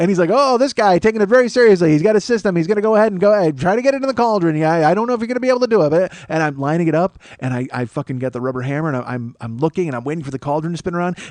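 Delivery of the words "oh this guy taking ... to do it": mocking, pitched-up, teasing carnival barker patter. Retelling how a carnival barker teased a player: imitating a barker mocking someone. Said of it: "he's making fun of me".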